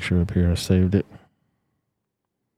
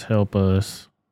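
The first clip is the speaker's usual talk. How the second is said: ordinary delivery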